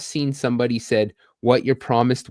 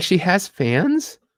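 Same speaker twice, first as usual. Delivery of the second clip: play-acted baffled, clueless, puzzled voice, high-pitched; 8 semitones higher than usual. Imitating a mom who doesn't know what OnlyFans is: imitating mom, puzzled. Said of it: "She'd be like".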